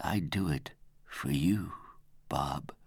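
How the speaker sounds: breathed, said on a breath. A man looking into the narrator's eyes speaks to bob: breathed. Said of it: "He breathed".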